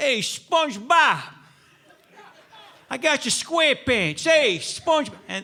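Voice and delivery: put-on thick New York accent. Recalling voices heard on their left during a movie, thick New York accent. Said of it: "thickest New York accent voices".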